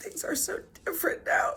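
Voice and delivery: whispered, soft, breathy speech through tears. Speaker unexpectedly moved to tears while talking, crying while talking. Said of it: "I did not expect to cry like this".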